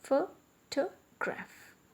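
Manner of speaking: photograph with stress on first syllable pho. Demonstrating word stress in a pronunciation lesson, stress on PHO in photograph. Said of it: "Here the stress is on the word photo".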